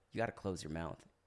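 low-pitched, quiet, stern, deadpan voice. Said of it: "He goes".

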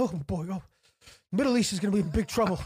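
thinking aloud to oneself. Retelling how a teacher reacted in class: imitating a teacher muttering to himself. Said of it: "he starts muttering to himself".

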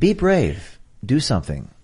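hushed public-radio announcer voice. Speaker urging listeners to act switches into his NPR voice. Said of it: "Here's my NPR voice".

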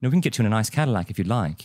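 put-on British accent. Discussing voices that sell, the speaker demonstrates a Jony Ive British accent. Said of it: "Like those kind of voices".

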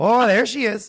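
polite Canadian accent. Showing how Canadians catcall someone: put-on Canadian accent. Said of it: "the Canadian catcalling is".

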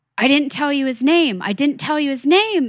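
mock upset, high, emotional shouting, said twice. Retelling how a client reacted during a reading: imitating someone yelling. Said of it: "he starts yelling".

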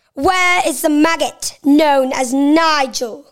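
put-on British accent. Asked to do a british accent, performing one of their lines: british accent. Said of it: "Can you do a British accent?".

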